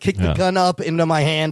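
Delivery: ordinary delivery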